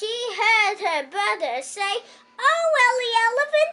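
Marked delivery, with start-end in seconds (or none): 2.4-3.7 frightened, alarmed cry, high-pitched and raised. Narrating a story, a brother cries out to his falling sister in a frightened voice. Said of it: "in a frightened voice".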